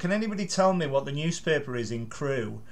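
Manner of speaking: ordinary delivery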